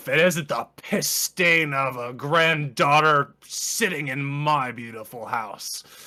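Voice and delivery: booming, slow, drawn-out bellow. Voicing a stocky man with a cane who looks up and speaks, bellowing voice. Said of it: "his bellowing voice says".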